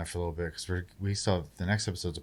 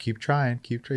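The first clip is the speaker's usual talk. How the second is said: mock sarcastic voice, higher and louder; 6 semitones higher, 5 dB louder than usual. Retelling how a character taunts an enemy: imitating a sarcastic taunt. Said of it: "sarcastic about".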